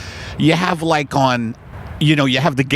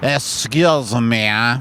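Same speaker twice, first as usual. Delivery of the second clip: put-on French-accented English; 3 semitones lower than usual. Walking up to people in a park in a hat: French accent. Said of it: "in a French accent".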